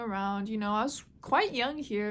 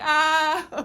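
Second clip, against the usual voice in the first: high, loud cry of pain. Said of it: "and I was crying".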